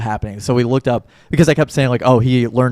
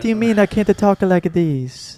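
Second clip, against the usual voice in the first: put-on Italian accent, higher pitch; 8 semitones higher than usual. Imitating a movie character who talks in a fake Italian accent. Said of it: "this fake Italian accent".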